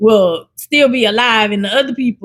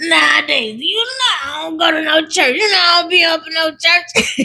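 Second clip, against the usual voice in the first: put-on older lady's voice, high, slow and unhurried; 6 semitones higher than usual. Retelling what a lady told grandma, imitating her voice. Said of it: "that's how that lady sounds".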